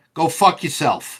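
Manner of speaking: New York accent. Signing off to another speaker on the show, new york accent. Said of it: "as I say it like a true New Yorker".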